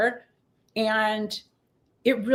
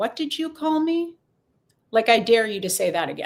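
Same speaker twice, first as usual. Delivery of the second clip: mock stoic, calm, unflinching steady tone. Retelling answering a girl who called a bad name: retelling a stoic dare. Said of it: "I sort of stood there quite stoically".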